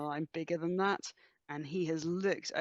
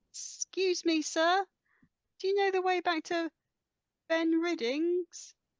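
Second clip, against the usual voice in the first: very high, proper, polite, respectable voice; 13 semitones higher, 5 dB louder than usual. A player's character asks a man for the way back: best not-an-urchin voice. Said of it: "put on my best I'm not an urchin voice".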